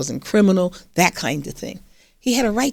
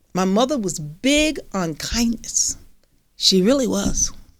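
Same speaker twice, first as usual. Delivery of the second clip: choked-up voice, emotion catching in the throat. Speaker recalling what their family taught them, getting a little choked up. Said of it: "I'm getting a little choked up".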